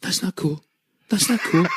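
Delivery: mock, very high, frantic, panicked self-repeating. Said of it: "just kept saying, repeating to himself".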